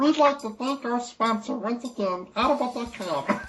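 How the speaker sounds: very high-pitched, slow cartoon voice. Dared to try it, the speaker reads the sponsor thank-you: Munchkin voice. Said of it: "I can do it in Munchkin voice".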